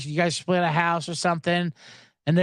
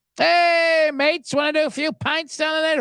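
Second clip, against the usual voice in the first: full-on fake British accent, very high pitched; 10 semitones higher, 3 dB louder than usual. Mocking Americans who picked up British terms; put-on British accent. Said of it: "full on British accent".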